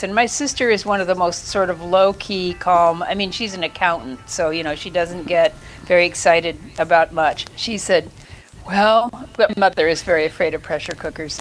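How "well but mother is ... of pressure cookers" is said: ordinary talk, nothing marked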